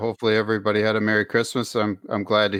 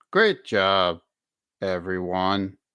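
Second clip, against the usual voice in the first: put-on bored tone; 2 semitones lower than usual. Imitating a coach's post-win speech: bored tone imitating LaFleur. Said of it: "almost like in a bored tone".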